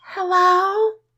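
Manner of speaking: very high, cute, tiny little voice. Play a woman talking to him through the closed door, in a cute little Liv Tyler voice. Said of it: "in her cute little Liv Tyler voice".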